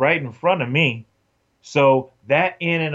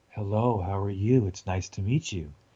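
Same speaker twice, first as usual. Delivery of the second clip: very low, cool, collected, calm and quiet; 5 semitones lower, 7 dB quieter than usual. Retelling how a woman greeted the speaker before an audition, imitating her very low, calm voice. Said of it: "very, very low, calm, cool voice".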